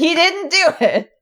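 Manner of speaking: mock child's very high, stretched-out, drawn-out shout. Retelling standing up on a seat during a play: imitating own childhood yell. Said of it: "stood up on my seat and yelled".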